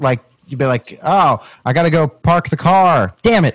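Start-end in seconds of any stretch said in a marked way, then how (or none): 1.0-3.5 bad, botched Boston accent, loud and high. Imagining another speaker trying and failing: failed Boston accent. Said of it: "try and do a Boston accent and fail".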